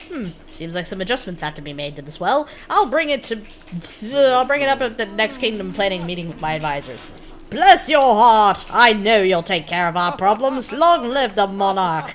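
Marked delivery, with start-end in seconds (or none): 7.5-12.1 put-on British accent, slower. Voicing a character cheering the monarch in a game, put-on British accent. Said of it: "I'm so good at British accents".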